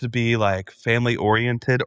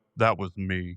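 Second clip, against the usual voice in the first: put-on deep, low disguised voice; 4 semitones lower, 6 dB quieter than usual. Picturing a man's question, the speaker answers from the back in a deep put-on voice. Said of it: "in a deep voice in the back with a wig on".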